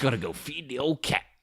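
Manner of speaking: put-on slimy lounge-lizard sleazy voice. Voicing a woman's made-up excuse for leaving a date, in a put-on sleazy voice. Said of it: "It's my sleazy voice".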